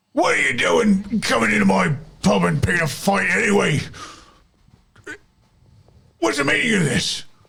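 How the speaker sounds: put-on befuddled drunken angry bluster, rough, high. Voicing a drunk pub owner confronting the party, drunk, confused and angry. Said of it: "he's drunk and like confused and angry".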